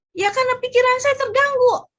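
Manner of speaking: loud, high-pitched upset voice.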